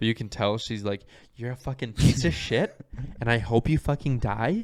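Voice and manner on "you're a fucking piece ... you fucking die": play-acted pleasant tone with venom underneath. Retelling what a woman in a club meant, imitating smiling through an insult. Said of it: "she's keeping like a happy face".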